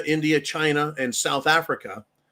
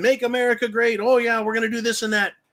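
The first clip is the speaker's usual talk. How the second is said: mock fired-up, high-pitched yelling; 7 semitones higher than usual. Retelling Trump standing up there, imitating Trump screaming. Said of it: "he's standing up there screaming".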